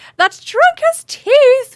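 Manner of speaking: put-on very high, very loud, frantic young elf scream. Narrator voicing a young elf running past the fleeing crowd: young elf screaming. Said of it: "a young elf screams".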